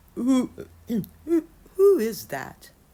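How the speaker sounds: put-on very loud, high, crackly old woman voice. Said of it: "He called in a crackly voice".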